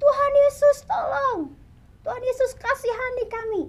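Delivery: high, loud, desperate pleading cry.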